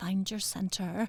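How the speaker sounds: soft, eerie, half-whispery meditation-app style voice. Describing meditation apps, the speaker imitates how they talk: creepy half-whispery meditation voice. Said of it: "they'll talk like this".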